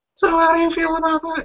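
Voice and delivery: very high falsetto woman's voice. Explaining why he borrowed a woman's voice for his questions, in falsetto female voice. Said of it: "in falsetto".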